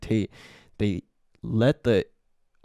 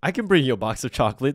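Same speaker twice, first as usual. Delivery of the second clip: put-on ecstatic, quick-changing, happy, eager cheerfulness; 4 semitones higher than usual. Speaker retelling how desperate Matt reacted to an interview offer; mock-happy retelling. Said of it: "He's like so happy".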